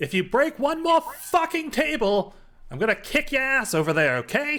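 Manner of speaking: very high, loud shouting, threatening tone. Narrating a scene to the players, voicing a woman shouting over the crowd. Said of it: "you hear a woman's voice kind of shout out over top of the crowd".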